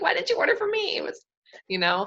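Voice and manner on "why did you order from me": high-pitched, squeaky, exasperated and disbelieving. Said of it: "You're just like".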